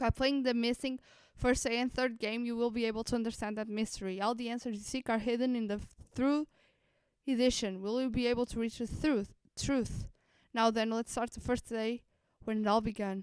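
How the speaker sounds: breakneck-speed, rushed, rattled-off reading. Reading a game's intro text aloud to a waiting audience, reading super fast. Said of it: "I had to read that super fast".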